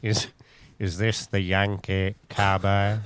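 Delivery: very slow, deliberate, every word drawn out. Imitating Alan Rickman in Die Hard, quoting his line. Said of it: "Alan Rickman".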